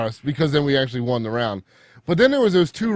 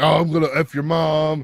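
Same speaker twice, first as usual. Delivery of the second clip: put-on jeering, taunting tone. Retelling what an opponent said in chat: imitating a trolling taunt. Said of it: "he went full troll mode".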